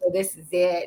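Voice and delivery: ordinary delivery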